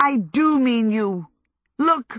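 long, shrill, dragged-out shriek. Narrator reads Howl answering Sophie: shrieking. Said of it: "Howl shrieked".

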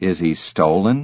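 ordinary delivery

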